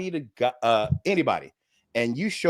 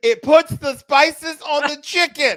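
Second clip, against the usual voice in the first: very high, very slow, drawn-out raised yell; 7 dB louder than usual. Retelling what a guy said while yelling: imitating a guy yelling.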